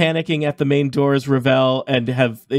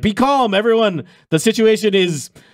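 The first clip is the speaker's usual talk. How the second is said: high, raised, unconvincing shout; 6 semitones higher than usual. Voicing guards shouting at a panicking crowd: guards shouting for calm. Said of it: "starting to be some shouts from the guards".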